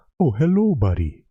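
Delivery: gentle, unhurried, easygoing voice. Imitate how a man starts every TikTok video, talking really softly. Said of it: "he talks really softly".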